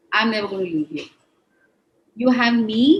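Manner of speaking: emotional, choked-up voice, thick with feeling. Speaker recalls what the woman who stood by her said the night her husband left: emotional. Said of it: "I'm going emotional".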